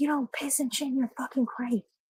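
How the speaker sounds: high, furious screaming tirade. Retelling how a man screamed at his dog, imitating someone screaming. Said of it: "he starts screaming at him".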